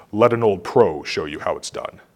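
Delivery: character voice dropped very low, soft. Retelling a scene, Mufasa's line to Simba in a Mufasa voice. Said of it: "in my best Mufasa voice".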